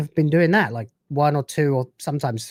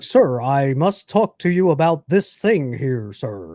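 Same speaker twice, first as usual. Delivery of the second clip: bad, unconvincing put-on American accent. Imitating a Brit's attempt at an American accent, bad fake American accent. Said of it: "it just doesn't sound really American at all".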